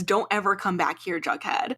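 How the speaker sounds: put-on distressed, upset speech. Retelling a father sending his son away: imitating distressed speech. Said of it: "really distressed".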